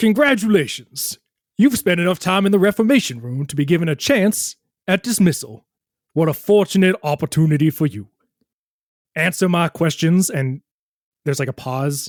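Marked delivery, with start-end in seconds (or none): 0.0-10.3 voice of a stone statue come to life. Voicing a statue that comes to life and speaks to the players: voice of the animated statue. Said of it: "and in the same voice says".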